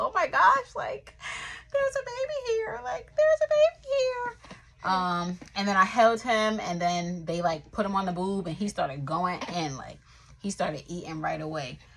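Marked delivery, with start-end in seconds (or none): 0.0-4.9 put-on overcome, tearful crying voice, very high. A new mother recalls first holding her baby: retelling her own crying. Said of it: "I'm just like crying and just like so emotional".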